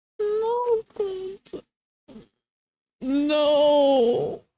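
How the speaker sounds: tearful voice. Watching characters die, tearing up. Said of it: "I'm tearing up again".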